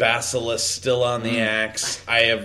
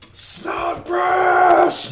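yelling, much higher pitch; 4 dB louder than usual. Amid the sounds of battle, a character turns and calls for someone missing, yelling a name. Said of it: "I just kind of yell it".

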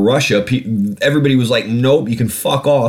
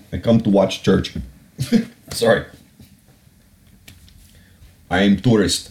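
bad, terrible, fake Russian accent; 3 semitones lower than usual. Retelling an official's claim he was a tourist visiting a church, terrible Russian accent. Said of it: "Terrible Russian accent".

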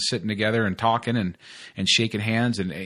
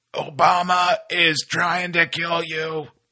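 pitched-up, very slow, dragged-out doom broadcast voice; 7 semitones higher, 4 dB louder than usual. Joking about starting a conspiracy podcast: Alex Jones impression. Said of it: "My great impression".

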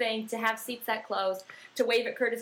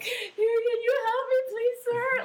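play-acted, very high-pitched, crying-through-tears pleading; 4 dB louder than usual. Recalling trying to find her seat at the field, she asks a man for help, retelling crying through tears. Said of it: "crying through my tears".

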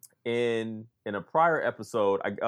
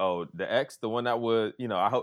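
ordinary talk

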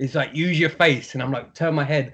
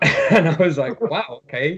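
ordinary talk, nothing marked

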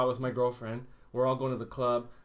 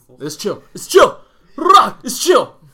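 shrill, booming, very high, wildly swooping delivery; 11 semitones higher, 15 dB louder than usual. Doing a Raptor impression for the others in the conversation. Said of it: "That's my Raptor impression".

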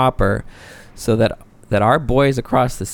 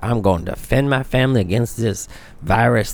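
put-on Southern American drawl.

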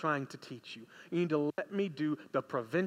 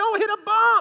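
very high, very loud, shrill, pleading scream; 14 dB louder than usual. Recalling the truck ride to the hospital in pain, retelling own past screaming. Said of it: "I'm screaming all the way".

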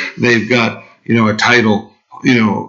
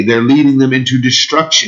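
ordinary delivery

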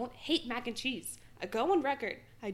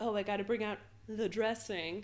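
mock snide, jokey jabbing tone. Speaker retells someone's teasing remark about the dressing, mock-snide joking. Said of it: "jokingly, snidely be like".

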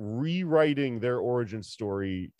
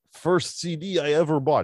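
put-on thick Serbian accent, higher; 5 semitones higher, 4 dB louder than usual. Retelling what a visiting student from Serbia said at the bar: imitating a thick Serbian accent. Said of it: "She's a thick accent".

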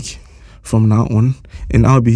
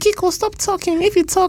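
put-on childish voice, higher and quieter; 4 dB quieter than usual. Quoting listeners' comments about the recipe segment: imitating Salma's voice. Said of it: "Is this an imitation of my voice?".

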